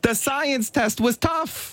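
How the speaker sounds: exaggerated put-on Italian accent. Two speakers imagine toddlers coming home from school; a broad italian accent. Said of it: "I shouldn't do Italian".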